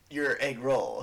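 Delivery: words squeezed out through gritted, clenched teeth. Quoting how a character says a line, talking through teeth. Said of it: "she's trying to talk through her teeth".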